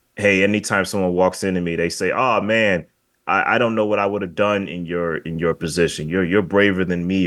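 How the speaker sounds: normal talking voice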